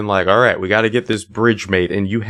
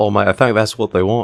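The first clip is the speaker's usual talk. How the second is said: terrible put-on British accent. Two hosts joking with each other for their listeners: terrible british accent. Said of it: "our terrible British accents".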